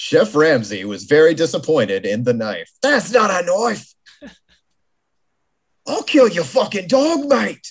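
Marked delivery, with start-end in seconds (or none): 2.8-7.7 put-on Australian accent, pitched up. Joking with others after one calls an accent Australian, in a Crocodile Dundee voice. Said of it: "that's Crocodile Dundee".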